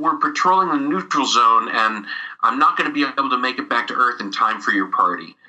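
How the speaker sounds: ordinary talk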